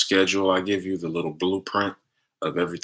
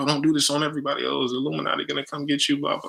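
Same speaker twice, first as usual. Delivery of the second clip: acted-out alarmed, worked-up, panicky freaking-out outcry; 8 semitones higher than usual. Retelling a client's reaction after a healing, imitating someone freaking out. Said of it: "she was freaking out".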